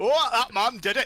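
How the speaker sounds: put-on Cockney voice. Mimicking another player's attempt at a character voice: imitating generic Cockney voice. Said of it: "You sound like generic Cockney guy in background".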